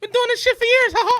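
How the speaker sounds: very high, loud squeak. Joking about Mickey ears with the others: Mickey Mouse voice. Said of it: "not a bad Mickey at all".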